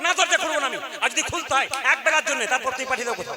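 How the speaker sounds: reproachful tone.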